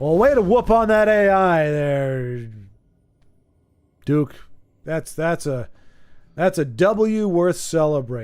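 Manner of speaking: heavily sarcastic tone. Congratulating a player on beating the AI: sarcastic tone. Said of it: "I think I've got some sarcasm dripping on my chin".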